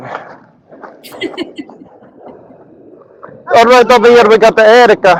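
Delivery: terrible, high-pitched put-on Jamaican accent. Speaker starts doing their commentary in a put-on accent: bad Jamaican accent. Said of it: "I'm going to do all my commentary in a Jamaican accent".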